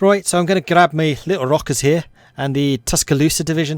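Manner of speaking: put-on Liverpool Scouse accent, pitched a bit high. Gamer gives orders to his divisions while playing in a Scouse accent. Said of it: "doing American division names in a Scouse accent".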